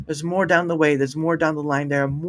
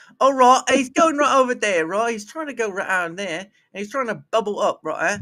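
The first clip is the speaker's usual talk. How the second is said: put-on Australian accent, pitched up; 5 semitones higher than usual. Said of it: "do an Australian accent".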